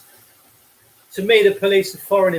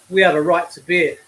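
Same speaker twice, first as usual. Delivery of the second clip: normal talking voice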